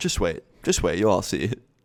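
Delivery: put-on, very calm voice. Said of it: "turns around very calmly".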